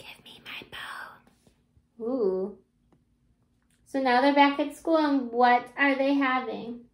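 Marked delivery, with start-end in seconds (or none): 0.0-2.1 put-on tiny, very soft, teeny whispered voice. Narrator reads a teeny tiny voice speaking while the teacher fills cups, whispering. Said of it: "a teeny tiny voice whispered".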